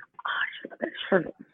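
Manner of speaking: soft, whispered aside.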